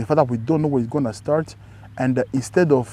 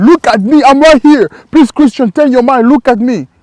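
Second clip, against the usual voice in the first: desperate, high, loud pleading scream; 10 semitones higher, 13 dB louder than usual. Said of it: "other means screaming".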